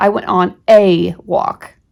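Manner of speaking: strong stress on the word a. Showing that stressing it means only one walk: stress on a. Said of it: "you're really emphasizing the word "a" to mean one".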